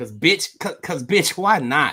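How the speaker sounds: woman's voice with a Houston accent.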